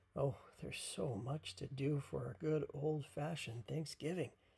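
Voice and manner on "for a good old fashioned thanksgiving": ordinary delivery, nothing marked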